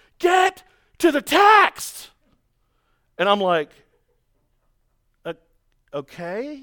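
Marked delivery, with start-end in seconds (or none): 0.2-2.1 shrill, piercing, very high, loud scream. Preacher recalls a lady interrupting his sermon; imitating a woman screaming. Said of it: "starts screaming at me".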